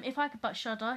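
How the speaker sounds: ordinary talk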